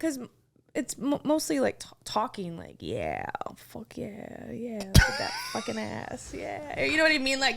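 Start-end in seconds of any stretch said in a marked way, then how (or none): 2.8-6.8 rough, creaky, crude male bedroom voice. Imitating how guys talk during sex: imitating a guy during sex. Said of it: "that voice you just did".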